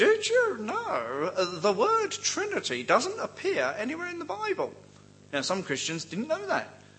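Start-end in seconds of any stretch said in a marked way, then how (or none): 0.0-4.7 very high, sing-song, swooping comic character voice. Acting out someone questioning a churchgoer, using the only voice you can do, a Mr. Bean-like voice. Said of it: "why do they talk like Mr. Bean? It's the only voice I can do".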